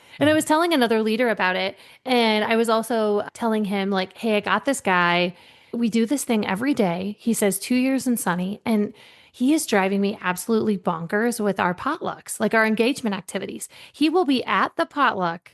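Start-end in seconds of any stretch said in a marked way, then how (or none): none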